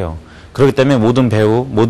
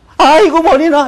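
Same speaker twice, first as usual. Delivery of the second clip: very high, overacted startled cry; 3 dB louder than usual. Demonstrating how someone in a hallway reacts when startled, startled. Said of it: "이렇게 놀란단 말이에요".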